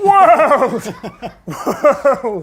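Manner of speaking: big booming voice. Introducing the next topic, the speaker says it in a big voice. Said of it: "That's my world voice".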